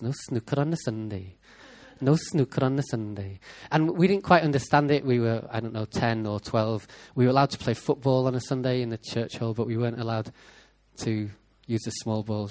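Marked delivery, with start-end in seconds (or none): 0.0-3.4 put-on Welsh accent, repeated. Recalling a youth leader from Wales whose accent the kids copied: imitating a Welsh accent. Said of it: "we used to copy his accent. He was from Wales".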